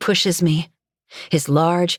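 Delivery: plain reading voice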